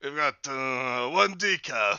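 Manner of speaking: beefed-up, butch, fake Kazakh-style accent. Playing Link climbing into the car with a decaf order, Borat-like voice. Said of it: "is the voice you're going for with Link Chad just gonna be Butch Borat".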